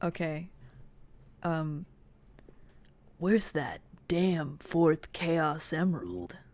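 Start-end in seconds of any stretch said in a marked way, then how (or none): 3.2-6.3 put-on video game hedgehog character voice. Asked for a Shadow impression, doing the voice: Shadow impression. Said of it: "what's your best Shadow impression?".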